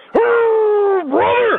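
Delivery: "oh" pitched very high and long drawn out. Joking that the other speaker sounds like Hulk Hogan: Hulk Hogan voice. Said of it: "You just sounded like the Hulk Hogan".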